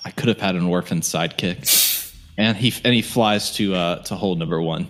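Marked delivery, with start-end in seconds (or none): 0.0-2.1 low, muttered murmur, half under breath. Voicing a character who watches someone float away: murmuring to himself. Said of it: "murmur to himself and be like".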